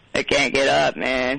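put-on slow, slurred, drunken speech. Joking about sounding like callers lying down: mock drunk voice. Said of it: "like you're all drunk and on the floor".

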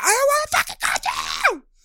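very high, swooping, raging, furious shriek. Retelling how a model screamed at another contestant: imitating someone screaming. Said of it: "she screams at her".

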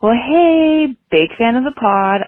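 polite customer-service voice. Caller leaving a message for a podcast, greeting the hosts in a customer service voice. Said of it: "I'm doing my customer service voice".

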